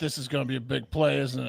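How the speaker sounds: ominous, foreboding sports-commentator play-by-play voice. Retelling how a guest commentator sounded: imitating an ominous call. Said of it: "He's like".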